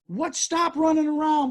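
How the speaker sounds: shrill, high, angry near-yell, scolding tone. Retelling how a lady scolded a small child: imitating a woman almost yelling. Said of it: "almost yelling at the kid".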